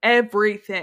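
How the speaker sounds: stress on everything.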